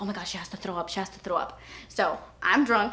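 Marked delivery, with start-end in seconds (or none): 0.0-1.6 soft, hushed whispered aside. Retelling what a friend whispered during a night out: imitating a whisper. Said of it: "Melissa whispers to me".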